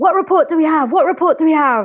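frantic repeated shouting. Recounting a presenter shouting while chatting with co-hosts: retelling frantic shouting. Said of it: "frantically shouting".

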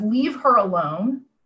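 ordinary talk, nothing marked

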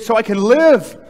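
high, loud, emphatic exclaiming.

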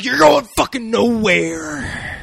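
very high, loud, drawn-out delivery. Retelling the Punisher's line to a shark: Macho Man voice. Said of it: "he doesn't do a Macho Man voice".

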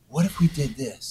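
soft, hushed, under-the-breath half-whisper. Retelling listening to a voice note in a dark kitchen: imitating own half-whisper.

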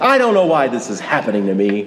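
put-on very grumpy, bitter, resentful grumble. Retelling what a sick man said in the hospital: imitating a grumpy complaint. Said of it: "in a very grumpy way".

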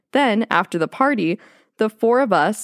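normal talking voice

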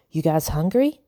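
usual speaking voice

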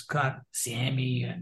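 slow, soft, squeaky voice. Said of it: "he had this squeaky voice".

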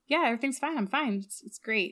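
put-on flippant voice. Retelling a scene where Carter answers Jack: imitating Carter being flippant.

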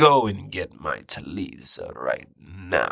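put-on spirit mother voice, slow and drawn-out. Retelling how Mother Aya spoke to them, in Mama Binturong voice. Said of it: "Mama Binturong talks like this".

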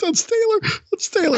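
tearful crying with voice very high. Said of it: "And I'm just there crying".

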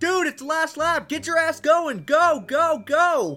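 loud, high-pitched shouting. Retelling a crew chief and spotter yelling at their driver, retelling a yell. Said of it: "his crew chief and spotter are yelling at him like".

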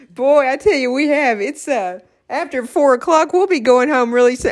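words bubbling over with laughter throughout. Agreeing that the day has been fun: laughing while talking. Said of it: "if I could just quit laughing".

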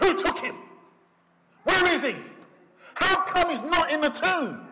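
angry, rising pitch. Imagining what Peter said on the way home, Peter's mock-angry voice. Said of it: "saying with an angry voice".

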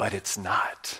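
hushed, soft, close leaning-in whisper. Voicing god leaning in to answer the listeners: whispering. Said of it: "God leans in and he whispers".

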